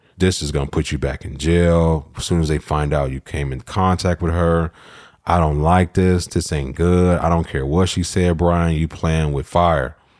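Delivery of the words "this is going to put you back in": plain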